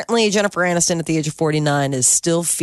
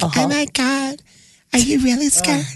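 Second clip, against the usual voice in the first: crazy voice pushed way up high; 10 semitones higher than usual. Recalling Ross's reaction on Big Brother Celebrity, Ross's high voice. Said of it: "that high voice?".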